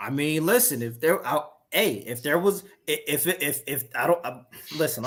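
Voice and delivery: stumbling, stuttering restarts with flustered stammering false starts. Speaker pressed about finding a way to play on a PS5, stuttering. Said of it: "I'm stuttering and shit right now".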